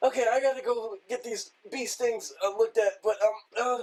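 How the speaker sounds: shaken, rattled, high, loud host voice. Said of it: "him going".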